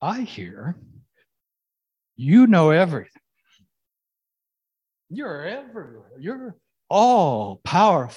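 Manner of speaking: put-on, slightly smug, knowing, sing-song delivery. Imagining a voice speaking to God, the speaker acts it out mock-smug. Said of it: "maybe a little smugly".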